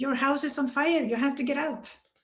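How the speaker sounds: urgent, pressing, acted-out call. Speaker recounts a stranger banging on the door, retelling the stranger's shout. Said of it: "he was shouting at us or at me".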